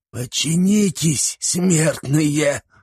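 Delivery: sibilant hissing voice. Narrator reads a sorcerer casting a spell on warriors; hissing. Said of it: "прошипел".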